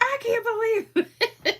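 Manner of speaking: voice way up, slow, laughing through tears. Retelling a friend reading a joke, imitating someone laughing to tears. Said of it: "tears running down her face, crying".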